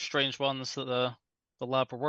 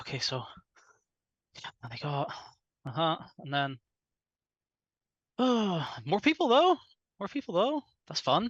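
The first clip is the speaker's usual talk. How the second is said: rambling, distracted, scattered talk to himself; 3 semitones higher than usual. Voicing Tommy dragging a player through the forest: rambling under his breath. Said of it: "rambling under his breath".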